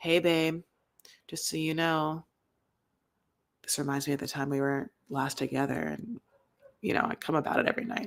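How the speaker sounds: sexy, seductive, low, hushed sultry murmur. Demonstrating how a man on camera ought to say it, in a low voice. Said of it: "how like low my voice went".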